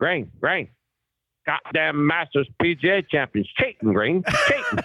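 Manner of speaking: flustered, swooping North Carolina drawl. Retelling a golf round, quoting Bob Boyd in his North Carolina drawl. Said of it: "He's got this great North Carolina drawl".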